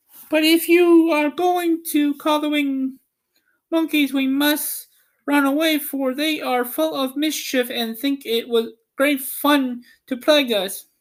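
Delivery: tiny, very high, squeaky little mouse voice. Narrator reads the Queen of the Mice's reply to Dorothy, squeaky Queen of the Mice voice. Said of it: "Among them was the Queen herself, who asked in her squeaky little voice, / Among them was the Queen herself, / who asked in her squeaky little voice".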